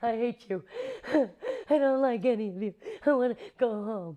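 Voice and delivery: acted, high, frightened choked-up outburst. Recounting their reply to the director praising the scene, retelling a choked-up outburst. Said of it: "really frightened and just kind of choked up".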